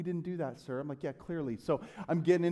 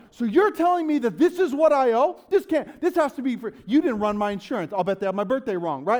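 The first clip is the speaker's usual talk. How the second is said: full-blown frantic meltdown tirade, high and loud; 6 semitones higher, 7 dB louder than usual. Retelling a past moment reacting to a bill owed, retelling freaking out. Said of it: "And I'm freaking out".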